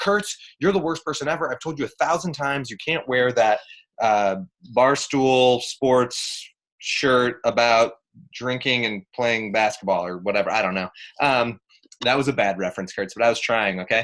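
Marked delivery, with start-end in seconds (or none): none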